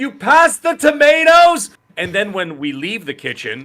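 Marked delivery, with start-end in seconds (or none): 0.0-1.7 very high, very loud, shrill screaming yell. Retelling asking for tomatoes over loud kitchen fans: retelling kitchen screaming. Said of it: "we're still screaming like that".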